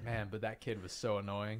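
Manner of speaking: ordinary talk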